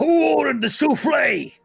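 very high, loud hollered shout. Voicing a lizard cook calling out orders: lizard cook shouting. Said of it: "He's just sort of shouting out".

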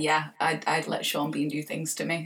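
ordinary delivery

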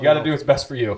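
sarcastic tone. Retelling a curt comeback to an elderly customer: retelling a sarcastic comeback. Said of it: "my sarcastic, like, statement comeback".

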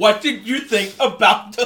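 slow, loud, mock aggressive tone. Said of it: "He's like".

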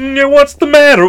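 very high cartoon frog puppet voice. Imitating old timers asking a question: Kermit the Frog voice. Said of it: "I just keep doing Kermit now".

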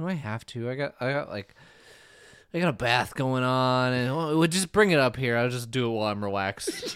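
put-on bored, lazy voice. Retelling how Jeff answered when asked to do voiceovers, imitating Jeff sounding bored. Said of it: "Jeff just sounds bored".

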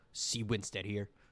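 deep, low-voiced. Imitating a deep-voiced guy from videos on the feed: deep voice. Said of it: "the deep voice who goes".

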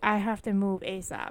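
ordinary delivery

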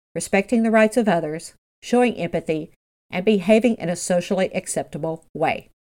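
normal talking voice

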